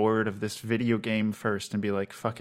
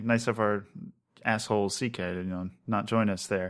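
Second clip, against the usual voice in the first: normal talking voice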